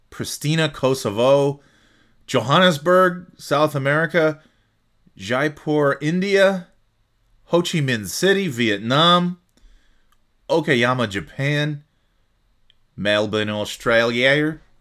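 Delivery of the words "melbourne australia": poor, bad put-on Australian accent. Reading out listener locations, putting on a bad Australian accent. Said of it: "I can't do an Australian accent that well".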